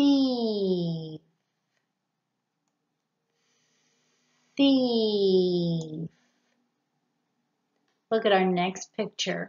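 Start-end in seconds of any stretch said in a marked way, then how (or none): 0.0-6.1 "thief" slowed right down, very slow and drawn-out. Modeling pronunciation in a picture lesson, said slowly. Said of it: "Say it slowly".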